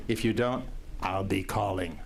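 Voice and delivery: bad put-on Austrian action-hero accent. Reminding people to get tickets by Friday, in an Arnold Schwarzenegger accent. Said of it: "in my best Arnold Schwarzenegger or worst Arnold Schwarzenegger imitation".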